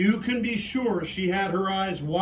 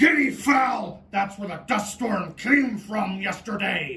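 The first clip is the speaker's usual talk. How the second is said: growling lion voice, growled through teeth. Reading a story aloud, voicing the lion's line in a growling lion voice. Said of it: "growled lion between his sharp teeth".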